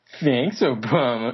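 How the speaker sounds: smirking, sarcastic, ironic smartass tone. Speaker demonstrating how the catchphrase comes out now, said with a smirk. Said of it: "it just comes out with a smirk".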